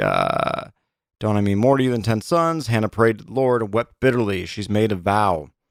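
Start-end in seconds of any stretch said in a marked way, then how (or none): none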